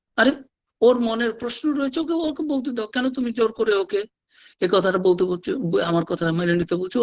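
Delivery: high-pitched scolding tone. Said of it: "ঠাকুর তাকে ধমক দিয়ে বলছেন".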